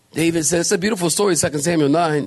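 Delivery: ordinary talk, nothing marked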